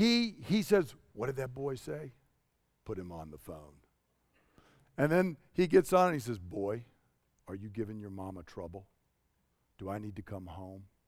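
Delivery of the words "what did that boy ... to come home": calm, low, very soft, never-raised voice. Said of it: "Never raised his voice".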